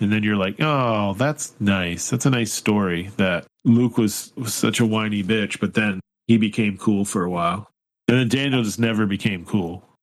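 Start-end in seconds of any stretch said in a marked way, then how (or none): none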